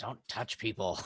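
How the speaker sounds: soft, muttered under the breath. Muttering at a party member in a role-play scene: saying under breath. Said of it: "I also say under my breath at Feo".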